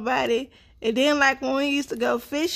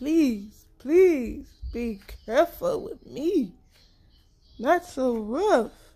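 slow, begging, pleading doll voice. Voicing a child's doll while the child does its hair: voicing the doll pleading. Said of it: "She said".

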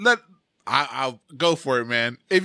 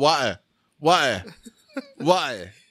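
water said with a mock British glottal stop. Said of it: "that's the dirty British speaking".

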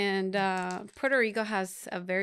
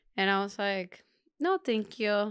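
plain

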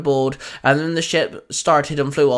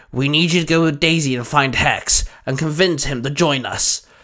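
usual speaking voice

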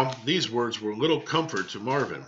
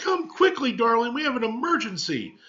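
urgent cry, pitched very high; 12 semitones higher than usual. A mother comes hurrying to fetch her son from his bed; crying out urgently. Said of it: "she cried".

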